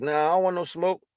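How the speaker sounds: normal talking voice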